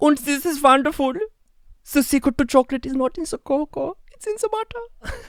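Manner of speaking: very high, loud, squealing German cartoon accent. Actor shows how they played an entire stage play; Three Little Pigs German accent. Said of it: "I did the whole play like this".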